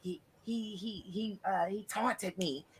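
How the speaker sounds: hushed, halting, very quiet, slow, stammering voice. Retelling a witness's courtroom testimony: imitating Amber Heard testifying. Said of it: "And she was like".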